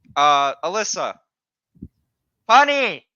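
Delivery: very loud, high-pitched calling out. Calling out to Alyssa, who is watching in the comments, yelling. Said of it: "Why are you yelling?".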